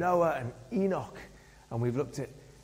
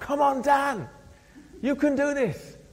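mock very high encouraging shout, cheering; 10 semitones higher, 4 dB louder than usual. Retelling a race where the club chairman ran behind, imitating someone shouting encouragement. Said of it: "he was shouting out".

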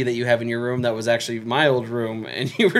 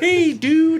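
put-on Canadian-sounding accent; 4 dB louder than usual. [name] imitates how a man always greets him on the phone, Canadian-sounding. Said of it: "he always sounds like a Canadian".

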